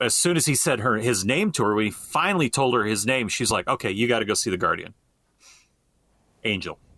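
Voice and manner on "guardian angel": pause between "guardian" and "angel". Retelling when his name was revealed, pause between guardian and angel. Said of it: "I'm saying it with a pause".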